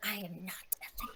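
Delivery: grumpy, huffy, very soft whisper. Voicing a grumpy character who huffs and denies being a thief: whispering in character. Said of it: "and whispers".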